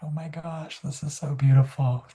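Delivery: put-on crying through the words, high and tearful. Retelling seeing a book's art for the first time: retelling own tearful reaction. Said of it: "we both just started crying".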